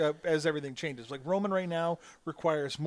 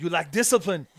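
put-on very loud, booming, lazy Austrian accent; 8 dB louder than usual. Answering a question about giving in to temptation, in an Arnold Schwarzenegger voice. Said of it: "Is that your impression? It's a half-assed impression".

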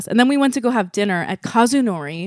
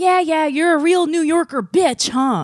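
put-on young child's scream, much higher pitched; 8 semitones higher than usual. Retelling what an 8-year-old screamed at a car, imitating Mino screaming. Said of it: "Like he screamed that".

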